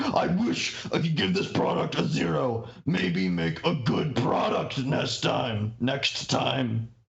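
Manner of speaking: loud all-caps shouting. Reading aloud a product review written in all caps, in an all-caps review voice. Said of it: "this is all in caps, so that's why I'm about to do the voice I am".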